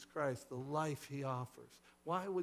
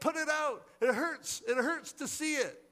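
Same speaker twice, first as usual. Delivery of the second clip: very loud, very high, pained, fearful cry; 12 semitones higher, 8 dB louder than usual. The people in the cavern turn away from the firelight, crying out in fear. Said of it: "they cried".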